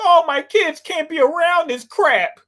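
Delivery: high, weepy, tearful, whiny crying voice. Mocking a listener who complained about their kids: imitating someone crying. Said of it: "you crying like".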